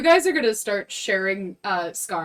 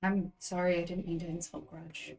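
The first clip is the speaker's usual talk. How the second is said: hushed, very quiet, leaned-in half-whisper; 3 semitones lower, 13 dB quieter than usual. Leaning over to Nuanin in character, half-whispering in character. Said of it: "kind of whisper and be like".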